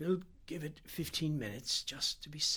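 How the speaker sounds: weary, spent, small, tired voice. Reading Ganderby turning to whisper to the narrator: whispered, small and tired. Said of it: "whispered to me, his voice was small and tired".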